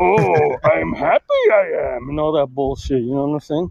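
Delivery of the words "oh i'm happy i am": very slow, creaky, swooping voice. Predicting how a character will talk when he emerges: Yoda voice. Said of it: "talking like Yoda".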